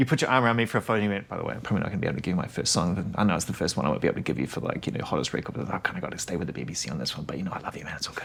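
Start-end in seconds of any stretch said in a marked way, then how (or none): 1.3-8.3 put-on whisper, lower and quieter. Retelling what a friend whispered during a photo: imitating someone whispering. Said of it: "He'll whisper things at you".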